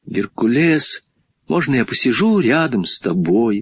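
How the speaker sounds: usual speaking voice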